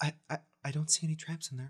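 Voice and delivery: whispering in an acted voice. Voicing a character who whispers to a companion: whispering in character. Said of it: "Ben just kinda whispers to Star".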